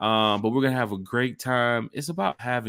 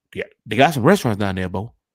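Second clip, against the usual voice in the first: put-on folksy country accent, loud and quick; 6 dB louder than usual. Speaker shows off the country voice they've been working on. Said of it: "that's my country voice".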